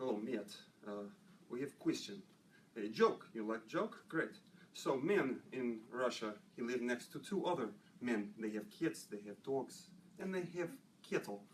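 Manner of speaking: heavy-handed, exaggerated put-on Russian accent. Retelling a joke a russian once told, the speaker tells it in a russian accent. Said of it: "I got a Russian".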